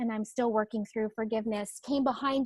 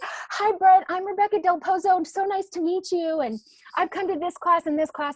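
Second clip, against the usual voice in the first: put-on, silly, giddy, starstruck, pitched-up gush; 7 semitones higher, 3 dB louder than usual. Retelling running up to an admired agent: imitating own giddy past self. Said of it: "this giddy, silly girl".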